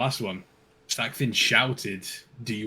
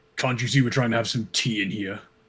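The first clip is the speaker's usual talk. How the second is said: half-irritated, mildly annoyed, put-out tone; 4 dB louder than usual. A narrator voices Sackvin turning to the door, almost annoyed voice. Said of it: "almost in an annoyed voice".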